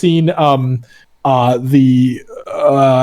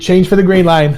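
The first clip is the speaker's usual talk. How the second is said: passable put-on Boston accent; 4 semitones higher than usual. Calling out subway stops in a game: put-on Boston accent. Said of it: "I can do a Boston accent okay".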